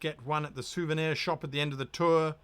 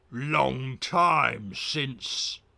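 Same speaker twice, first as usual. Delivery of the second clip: guttural, drawn-out growling creature voice; 2 semitones lower, 4 dB louder than usual. Narrator voices a creature greeting the player, in a guttural growling voice. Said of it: "It growls in a guttural voice".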